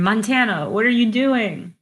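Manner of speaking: high, loud, far-carrying scream. A player's character screams one thing to another character who might just hear: screaming. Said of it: "I'll just scream".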